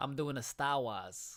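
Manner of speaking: put-on Boston accent. Introducing himself to everybody on the show; boston accent. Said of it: "that's the best Boston accent".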